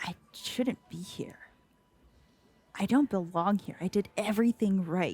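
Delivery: inward, self-directed mutter to oneself. A woman at the bar is asked what is bothering her: muttering under her breath. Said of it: "is just muttering under her breath".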